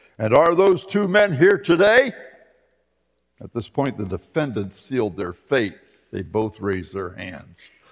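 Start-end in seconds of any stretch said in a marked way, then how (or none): 0.2-2.1 mock booming voice, pitch climbing as it goes. Telling a courtroom story, the prosecutor questions a witness, booming voice. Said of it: "asked in a booming voice".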